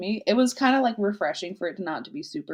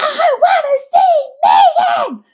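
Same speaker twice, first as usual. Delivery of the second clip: put-on shrieking little girl, very high, very loud; 13 dB louder than usual. Recounting a session where an upset little girl screamed; imitating a little girl screaming. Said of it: "she's like screaming".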